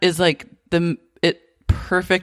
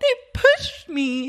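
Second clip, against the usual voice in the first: higher-pitched put-on meltdown voice; 9 semitones higher than usual. Recapping a favorite episode, imitating Scheana's emotional meltdown. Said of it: "like emotional meltdown".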